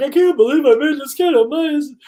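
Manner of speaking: put-on crying, high, tearful voice. Retelling how a friend sounded on the phone: imitating a friend crying. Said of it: "crying on the phone".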